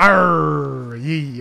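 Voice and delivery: loud stage pirate accent, arr drawn out. Playing along after being told the voice sounds pirate: put-on pirate voice. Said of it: "That's pirate now".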